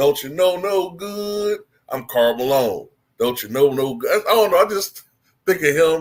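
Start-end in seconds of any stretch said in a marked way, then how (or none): 0.0-4.2 heavy drawling southern delivery. You think of a Martin Lawrence character when you hear the name; do a Karl Malone southern drawl. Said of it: "definitely has that southern drawl".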